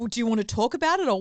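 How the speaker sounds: loud shout at full voice. Retelling what a man shouted to wake the speaker at four in the morning, imitating someone shouting out. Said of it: "And then he shouts out".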